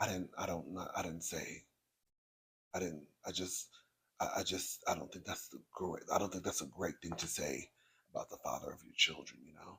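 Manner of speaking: mock low, very soft wounded victim voice. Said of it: "he started looking like this".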